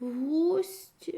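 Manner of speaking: puzzled, confused, bewildered, at-a-loss tone. Reading the snail as he answers the rude frog, confused. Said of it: "розгублено ствердив".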